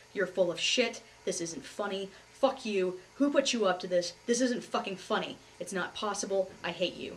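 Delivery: furious, enraged screaming from full lungs. Speaker retells screaming at the medical officer who said the speaker was pregnant. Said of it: "I'm screaming and I'm shouting at the top of my lungs".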